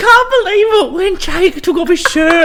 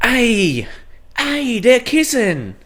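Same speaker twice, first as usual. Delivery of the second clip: imitated British accent, lower and quieter; 7 semitones lower, 5 dB quieter than usual. Retelling a friend watching the show: imitating Will and Ian's British voice. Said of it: "That was a pretty good Will and Ian impression".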